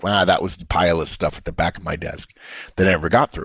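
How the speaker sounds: plain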